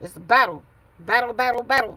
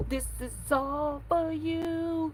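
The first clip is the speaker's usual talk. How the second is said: very soft, slow whisper, stretching out you; 6 semitones higher, 9 dB quieter than usual. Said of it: "In my [name] voice".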